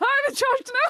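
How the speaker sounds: acted-out, high yell with the voice cracking. Playing a character shouting at the others and pointing: shouting with voice cracking. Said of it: "my voice cracking, but go".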